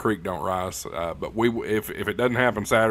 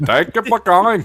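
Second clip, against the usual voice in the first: bad fake Indian accent, much higher pitch; 11 semitones higher, 10 dB louder than usual. Joking about someone's day job being a telemarketer, bad Indian telemarketer accent. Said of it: "That wasn't even a good Indian accent".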